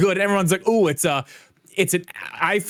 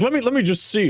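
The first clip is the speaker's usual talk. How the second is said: mocking tech bro imitation, higher pitch; 3 semitones higher than usual. Retelling how tech bros react: mocking imitation of tech bros. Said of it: "these fucking tech bros jump in like".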